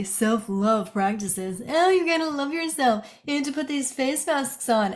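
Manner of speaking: very sarcastic, high air-quote voice. Mocking self-love practices advice with air quotes, mock self-love advice, sarcastic. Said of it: "i'm using air quotes over here very sarcastically".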